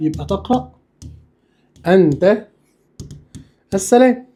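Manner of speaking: slow, long pauses before أنت and السلام.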